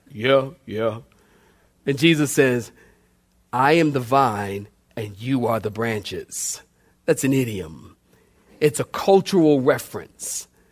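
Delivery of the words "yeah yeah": dopey, vacant, low, clueless agreeing tone. Retelling a Bible story, the speaker voices the disciples answering a question, mock-clueless voice. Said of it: "They had the clueless voice".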